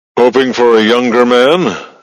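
amused, teasing ribbing with a chuckle. Narrating a story, a commander on the phone to a woman, chuckling. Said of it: "The voice chuckled".

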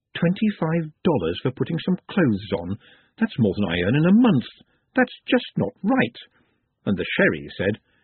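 ordinary delivery, nothing marked

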